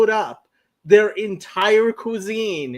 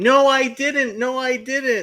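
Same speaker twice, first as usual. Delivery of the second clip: mock slow, tearful crying little kid voice; 4 semitones higher than usual. Retelling how a five-year-old cousin protested on a train: imitating a crying child. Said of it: "starts crying and saying".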